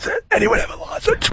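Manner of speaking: high, hoarse, whispered sore-throat voice.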